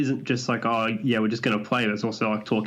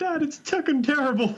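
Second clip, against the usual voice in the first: very high, squeaky, fake sobbing child voice. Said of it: "kid's, like, crying now".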